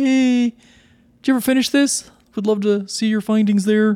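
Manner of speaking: very high, bright, chipper, cheery voice. Reading out own online comment asking about a finished thesis: cheery Muppet voice. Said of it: "voice is definitely a Muppet".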